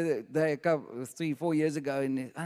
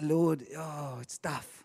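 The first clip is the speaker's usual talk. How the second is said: put-on moan; 4 dB quieter than usual. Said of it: "starting to moan a little bit".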